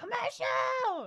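put-on very high, loud, slow, drawn-out toddler scream. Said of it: "so she starts screaming".

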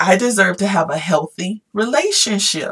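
ordinary delivery

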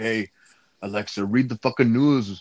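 slangy street-style voice. Retelling telling alexa to read the news, sounding like a vato. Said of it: "Why did I sound like a vato right there?".

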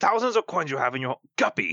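put-on Irish captain voice. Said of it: "I became like an Irish captain".

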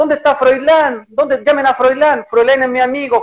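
high, tearful, sobbing, wailing shout. Retelling the old man being subdued, imitating Pinochet crying and shouting. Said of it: "Pinochet se pone a llorar y empieza a gritar".

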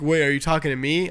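ordinary talk

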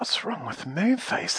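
soft, high, worried, fretful, anxious voice. Silky asks the others what is wrong with Moonface: anxious. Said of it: "asked Silky anxiously".

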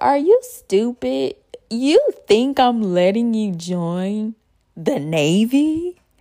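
loud, slow, mocking, laughing scoff. Retelling her dad's answer when she wanted to join the Navy: imitating Dad laughing. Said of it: "He laughed and said".

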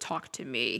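very low, soft, eerie, creepy voice. Telling how a voice suddenly changed, imitating Jake's creepy voice. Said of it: "in, like, this creepy voice, his voice changes".

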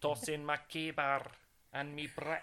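bad, put-on Scottish accent. Joking that brick tossing is a Highlands game: bad Scottish accent. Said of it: "That was a really shit Scottish accent".

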